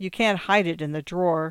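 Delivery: ordinary delivery, nothing marked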